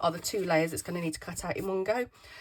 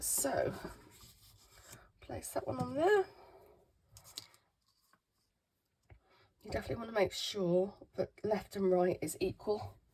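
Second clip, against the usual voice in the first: squeaky voice, plainly explaining; 4 dB quieter than usual. Speaker apologising for their voice while showing a machine setup, squeaky voice. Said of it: "Sorry about my squeaky voice today".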